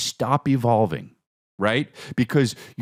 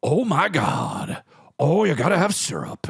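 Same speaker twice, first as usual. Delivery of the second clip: high, swooping, drawn-out ad-lib; 5 semitones higher than usual. Describing Al Pacino in recent movies, ad-libbing: Al Pacino impression. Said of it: "if Al Pacino's in a movie, he's like".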